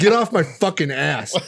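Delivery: put-on angry yell. Retelling an angry outburst at a tailgating driver, as they got out of the car. Imitating an angry yell. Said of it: "I was so pissed".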